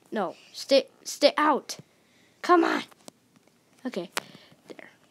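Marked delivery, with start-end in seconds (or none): 0.1-2.8 loud, cross, angry scolding with swooping pitch. Building in the game, telling a cow to stay out: angry voice. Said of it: "my angry voice on the cow".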